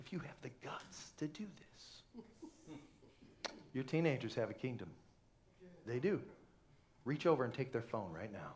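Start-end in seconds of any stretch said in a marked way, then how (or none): 0.0-1.7 soft, low-pitched whisper. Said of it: "whispered dare to parents".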